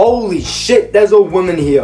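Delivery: high-pitched, slow, panicked voice.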